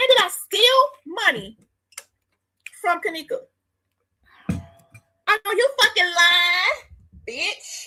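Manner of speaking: slow, furious, angry accusing tone. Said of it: "Let me lower my voice".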